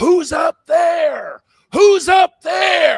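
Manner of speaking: shrill, very high, very slow, drawn-out scream. Retelling someone screaming at a player during a scrimmage game: imitating someone screaming. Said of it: "he was screaming at this guy".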